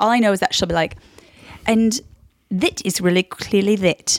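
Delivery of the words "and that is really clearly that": put-on Queen's English accent, drawn out and deliberate. Trying to tell the Queen's English apart: imitating Queen's English. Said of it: "the Queen's English".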